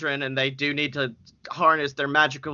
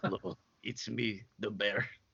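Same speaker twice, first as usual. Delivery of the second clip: low, hushed character voice, barely above breath; 6 semitones lower, 13 dB quieter than usual. Voicing a character everyone calls the Bear, in the Bear character voice. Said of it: "That's such a good voice for him too".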